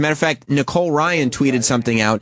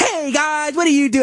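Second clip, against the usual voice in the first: put-on peppy child-actor voice, much higher; 10 semitones higher than usual. Mocking how YouTube video stars talk: Disney Channel actor voice. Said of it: "you talk like a Disney Channel T V actor".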